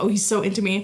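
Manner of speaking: ordinary talk, nothing marked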